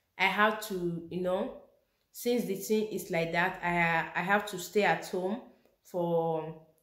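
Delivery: ordinary delivery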